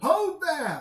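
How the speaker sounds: hailing voice. Voicing a gate guard hailing approaching travelers: guard calling out. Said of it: "calls to you as you get".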